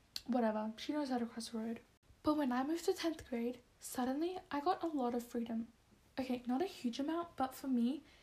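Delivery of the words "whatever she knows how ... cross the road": ordinary delivery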